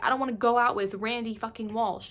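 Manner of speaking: normal talking voice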